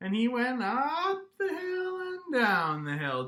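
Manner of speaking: voice sliding high and low. Storyteller telling a story and inviting listeners to join in, voice sliding high and low. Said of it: "vocal pitch exploration".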